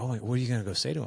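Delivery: put-on worked-up eagerness. Retelling a coworker's reaction on seeing a long-lost father: imitating a coworker's excitement. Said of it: "she got all excited".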